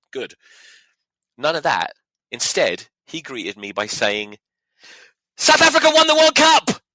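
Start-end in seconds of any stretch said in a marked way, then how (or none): 5.3-6.7 very loud, shrill, high-pitched shout. Retelling how someone greeted them, retelling a yell. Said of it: "He yelled it at me".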